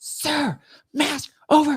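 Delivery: mock yell, very high and shrill. Retelling a security officer's order at the airport: imitating someone yelling. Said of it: "She, like, yells at me".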